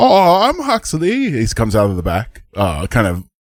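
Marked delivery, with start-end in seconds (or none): 0.0-1.3 tiny, high-pitched gnome voice. Speaker introduces the very small gnome character Huxley, in Huxley gnome voice. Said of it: "I wanted to go old, and somehow I went up".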